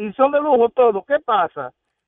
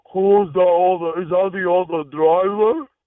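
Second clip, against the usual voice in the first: put-on horse-like voice, lower; 4 semitones lower than usual. Retelling what a woman said when he got in: imitating a horse-like voice. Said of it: "con una voz como si fuera de un caballo".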